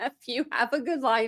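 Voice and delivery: put-on words bubbling with laughter. Quoting a woman's remark, laughing while talking. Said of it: "I'm sorry I'm laughing".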